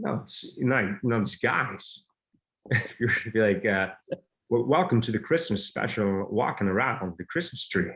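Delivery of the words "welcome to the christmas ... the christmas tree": drawling, theatrical actor-style voice. Someone asks to hear your Christopher Walken, so you try a Christopher Walken impression. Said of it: "What's your Christopher Walken?".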